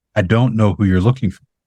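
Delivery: ordinary delivery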